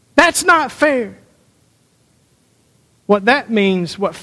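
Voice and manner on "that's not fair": loud, high-pitched, indignant shouted delivery. Showing how people shout about fairness: shouted complaint. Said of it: "when we shout".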